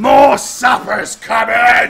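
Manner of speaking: bellowing shout at full volume. Voicing a captive orc bellowing to his allies: bellowing as loud as possible. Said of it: "he then bellows as loud as he possibly can".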